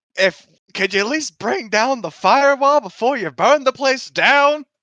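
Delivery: angry, loud, high-pitched, drawn-out yelling. Voicing a character telling someone off about the firewall: shouting at someone. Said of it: "shouted at him as well".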